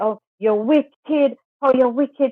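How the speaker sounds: mock angry, slow accusing tone.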